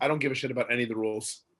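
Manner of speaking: ordinary talk, nothing marked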